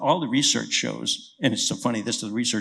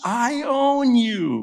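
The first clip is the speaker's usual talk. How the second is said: all-out full-lung yell, very high and swooping; 11 semitones higher, 3 dB louder than usual. Recalling bicycling up a hill after a beast, retelling a yell. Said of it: "I'm yelling at the top of my lungs".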